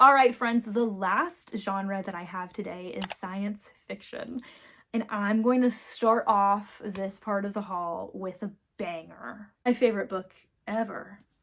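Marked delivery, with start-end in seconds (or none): 9.6-11.1 obviously ironic, sarcastic rave. Introducing a science fiction book in a book haul, sarcastic. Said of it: "I'm being sarcastic".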